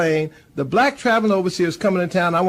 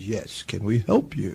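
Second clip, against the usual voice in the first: forced deepest voice, slow, with rising pitch; 9 semitones lower, 8 dB quieter than usual. Retelling how a man answered a stranger through the car window: imitating the deepest voice he could. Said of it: "in the deepest voice he could".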